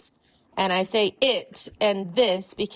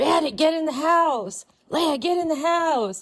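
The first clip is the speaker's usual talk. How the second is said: furious, angry high-pitched screaming and shouting; 8 semitones higher than usual. Retelling yelling at the dogs to get inside: retelling an angry scream. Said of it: "just screamed".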